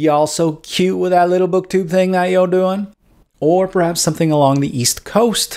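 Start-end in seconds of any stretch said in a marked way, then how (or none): 0.0-2.9 Deep South drawl. Explaining newscaster accents, the speaker demonstrates a Southern drawl. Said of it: "had Kenyon hailed from the Deep South".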